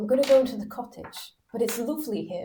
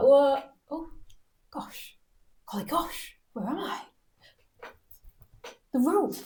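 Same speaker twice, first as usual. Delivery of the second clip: put-on slurring, words running together, still a bit drunk; 4 semitones higher than usual. Playing a character still a bit drunk: drunken slurring. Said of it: "slurring, still a bit drunk".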